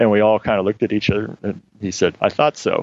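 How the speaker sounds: normal talking voice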